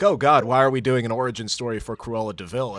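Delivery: ordinary delivery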